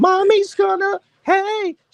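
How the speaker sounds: put-on very high, squeaky baby-talk voice. Describing a pet owner whose voice angered the animals, imitating her high-pitched voice. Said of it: "by that high pitch that she was using".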